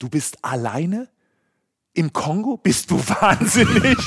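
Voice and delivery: very slow, high, drawn-out, stunned, shocked disbelief. Retelling a man's reaction on hearing the speaker travels alone, acting out shocked disbelief. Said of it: "Und da fällt ihm wirklich alles aus dem Gesicht".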